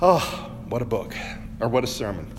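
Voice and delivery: choked-up, tearful exclamation, emotion catching in throat. Speaker talking about a sermon that usually moves him to tears, choked up. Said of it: "I'm getting choked up now".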